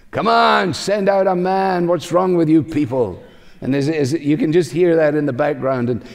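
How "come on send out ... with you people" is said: acted giant shout, much higher pitch. Retelling the story of Saul and David, imitating the giant shouting. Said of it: "the giant in the background shouting out again".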